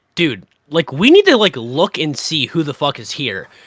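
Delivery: normal talking voice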